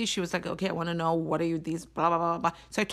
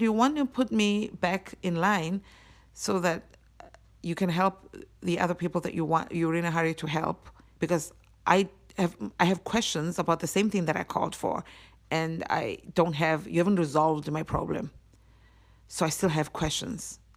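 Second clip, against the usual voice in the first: usual speaking voice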